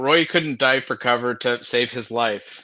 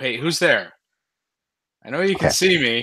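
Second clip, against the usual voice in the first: loud yell with a raised voice, calling out; 3 dB louder than usual. Voicing a character who turns sharply and yells at a building: yelling in character. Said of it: "kinda actually just yell out".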